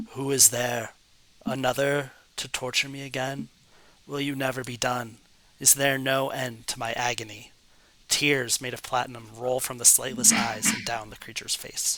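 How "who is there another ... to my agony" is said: uncanny, level monotone creature voice. Narrator voices a living idol that has suddenly awoken, in a strange, flat voice. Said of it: "speaks in a strange, flat voice".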